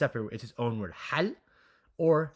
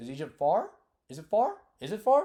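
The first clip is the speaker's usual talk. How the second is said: questioning upward lift at the end on far. Teacher showing students how an English question sounds, rising question intonation. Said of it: "we're raising our pitch of voice as you would in English".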